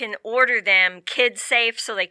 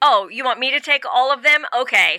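put-on snide, sarcastic, mocking tone; 4 semitones higher than usual. Describing a couple splitting up bags, quoting the woman's remark, imitating her sarcasm. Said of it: "sarcastic comment".

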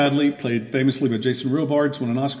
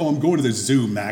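put-on frustrated, angry delivery. Quoting a movie heroine walking out on her supervisor: imitating a frustrated, angry line. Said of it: "Frustrated and angry about everything".

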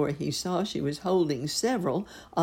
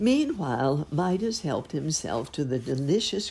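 plain reading voice

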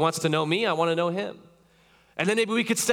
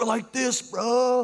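put-on high-pitched California surfer-bro accent; 5 semitones higher than usual. Mimicking someone who claims closeness with God, California accent. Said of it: "I sound like my youth was like from California".

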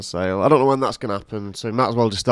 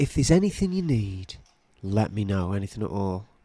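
put-on earnest, sincere tone, quieter; 5 dB quieter than usual. Retelling a sister's offer of help: imitating Alice's earnest tone. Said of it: "She said this earnestly".

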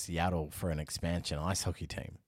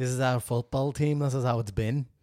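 terrible put-on Liverpool accent, loud and high; 7 semitones higher, 8 dB louder than usual. Acting out someone rejecting a new logo idea for a football team: terrible Liverpool accent. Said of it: "That's a terrible Liverpool accent".

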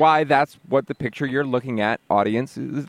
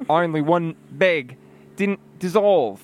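English with an Australian accent; 4 semitones higher than usual. Actor redoing a line after being asked for another pass, Australian accent. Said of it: "Do another pass on that with the accent".

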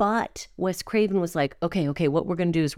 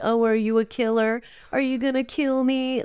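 sassy, sarcastic, pitched-up delivery; 5 semitones higher than usual. Quoting a character from a favorite scene, in a mock-sarcastic character quote. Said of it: "I just love her sarcastic".

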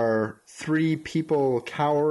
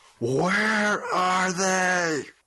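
angry character voice, pitched up, calling out; 6 semitones higher than usual. Voicing an unseen figure heard in the distance: angry voice. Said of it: "familiar, angry voice".

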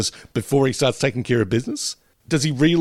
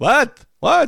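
very high, loud cartoon old-man voice; 5 dB louder than usual. Echoing a voice another speaker described hearing: old guy from The Simpsons voice. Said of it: "With that real".

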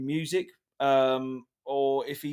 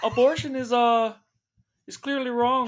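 very high-pitched character voice; 9 semitones higher, 4 dB louder than usual. Reading a quote back as Jordan Peterson: Jordan Peterson impression. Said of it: "read it back to me, uh, as Jordan Peterson".

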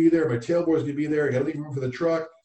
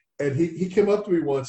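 ordinary talk, nothing marked

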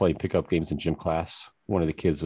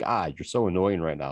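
normal talking voice

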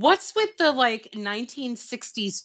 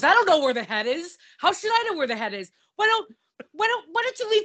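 put-on angry outburst, higher pitched; 8 semitones higher than usual. Retelling a character flipping out at a reporter: imitating someone flipping out. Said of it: "He flips out".

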